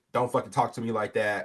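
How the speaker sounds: ordinary delivery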